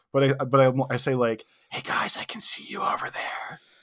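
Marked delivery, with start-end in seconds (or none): 1.7-3.6 soft, breathy, barely voiced whispered words. Retelling greeting waiters from a restaurant table: imitating own whisper-talk. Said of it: "whisper talk".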